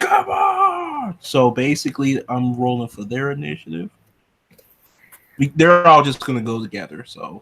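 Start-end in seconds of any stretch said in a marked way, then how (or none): 0.0-1.2 put-on, very high-pitched holler, "on" drawn out.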